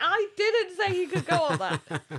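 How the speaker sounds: drawn-out, swooping shout. Speaker retells how a boy's mother answered the coach: retelling a shout to the coach. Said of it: "Like she was shouting to the coach".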